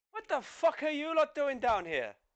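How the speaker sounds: high, snarling Irish voice.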